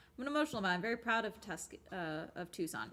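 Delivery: plain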